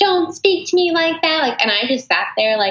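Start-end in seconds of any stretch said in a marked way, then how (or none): 0.0-1.4 very high, shrill screaming. Retelling how one would once have answered someone rude: imitating yelling. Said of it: "I would have been screaming at them, like, yelling at them".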